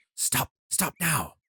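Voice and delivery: hushed, hissed, close and quiet. Narrating the forest walk, the creature suddenly warns you: Jan hissing in your ear. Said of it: "hisses in your ear".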